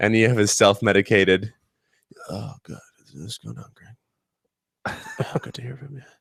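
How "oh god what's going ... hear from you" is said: put-on sad voice, quieter. Retelling a phone call with a friend: imitating a sad Joe Cocozello. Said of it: "the most sad Joe".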